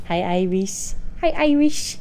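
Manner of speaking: put-on cutesy, high-pitched baby talk. Demonstrating how you change your voice when greeting someone, high-pitched baby voice. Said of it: "I change my voice when I'm talking".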